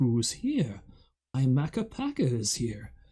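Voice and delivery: slow, swooping, creepily soothing British narrator voice. Show what the narrator would always say, as the creepily soothing In the Night Garden narrator. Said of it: "this creepily soothing British voice".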